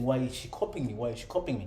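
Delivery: ordinary delivery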